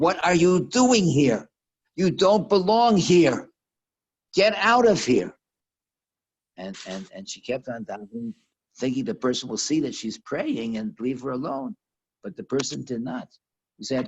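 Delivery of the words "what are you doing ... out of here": high, loud, slow angry yell. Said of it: "the person coming through the room yells at her".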